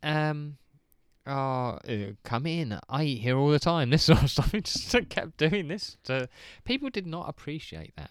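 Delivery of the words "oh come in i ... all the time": put-on Mexican accent on every word. Retelling a costumed man's joke outside restaurants, imitating a Mexican accent. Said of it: "doing a Mexican accent".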